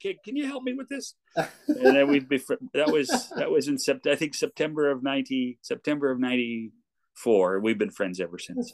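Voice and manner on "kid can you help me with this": put-on shout, higher. Retelling calling a passing kid in for help: retelling own yell. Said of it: "so I yelled at him".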